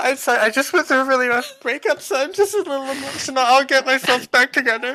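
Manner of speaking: hard, loud, very high-pitched fake sobbing. Playing a character who bursts into fake tears while a woman talks, fake crying really hard. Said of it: "I'm gonna burst into fake tears and be crying really hard".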